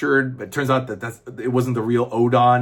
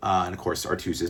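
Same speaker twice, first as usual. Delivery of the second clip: ordinary talk, nothing marked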